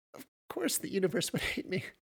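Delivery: whispered, breathy, half-laughing choked words. She answers a question, choking through mad chuckling. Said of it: "she choked through the mad chuckling".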